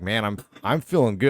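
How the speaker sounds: plain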